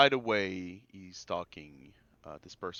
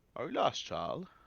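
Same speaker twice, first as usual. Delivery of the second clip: put-on elderly voice, pitched up; 6 semitones higher than usual. Narrating a game scene, an elderly voice interrupts a player's meditation; use an elderly voice. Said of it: "By an elderly voice that will ask".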